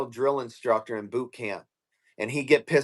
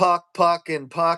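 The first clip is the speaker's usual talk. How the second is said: put-on screaming, slower; 3 semitones higher than usual. Recounting how a man kept screaming one word at him: retelling a scream. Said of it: "screaming at me".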